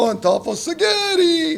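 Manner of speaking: acted-out shrill, very high screaming. Doing a puppet act of a poem, first line screamed out: puppet Diego screaming a line. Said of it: "he screams it out".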